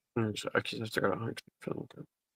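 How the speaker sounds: indistinct muttering. In a role-play scene, a character answers another, mumbling. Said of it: "You're mumbling a lot and I can't understand you".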